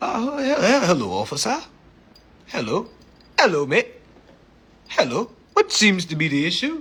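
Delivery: put-on British accent. Retelling talking to an officer, talking like a British man. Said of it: "talking like a British man".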